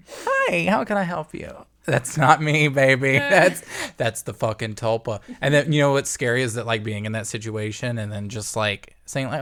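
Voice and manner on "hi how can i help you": very high-pitched customer service voice. Showing the voice that comes out of them with customers, in a customer service voice. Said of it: "putting on a customer service voice".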